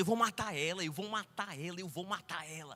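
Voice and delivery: comic, bursting, menacing, raging demon voice. Speaker retelling to laughing listeners what the demon kept saying, imitating Satan raging. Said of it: "Satanás mesmo assim, rebentando".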